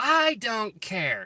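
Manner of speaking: furious scream, very high-pitched, very loud, shrill. Retelling a woman refusing to let workers into the house, imitating a woman yelling. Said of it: "She was so like yelling at this guy".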